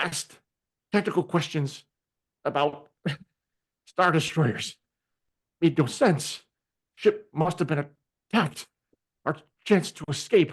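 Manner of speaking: faint, weak, feeble muttering in half-sentences. Voicing a wounded old man just coming around: weak muttering voice. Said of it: "In a weak voice, he mutters".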